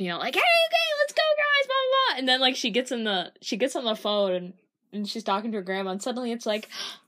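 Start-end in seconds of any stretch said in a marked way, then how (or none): 0.3-1.7 put-on energetic voice, much higher and louder. Describing how Reagan acts with the group, imitating Reagan's energetic voice. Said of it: "Reagan is like super energetic with us".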